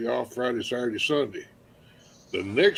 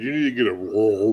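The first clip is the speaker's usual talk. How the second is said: normal talking voice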